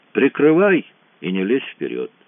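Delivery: ordinary delivery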